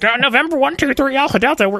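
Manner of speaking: strange, very high, fake student pilot radio voice. Retelling making voices while the father-in-law worked nearby, strange fake student pilot voice. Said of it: "making strange fake student pilot voices".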